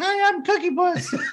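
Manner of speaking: very high, piping, high-pitched mascot voice. Describing the weird ice cream cone character: high-pitched Cookie Puss voice. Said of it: "it had a high pitched voice. It was like".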